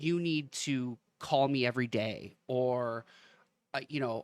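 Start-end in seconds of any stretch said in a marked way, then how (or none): none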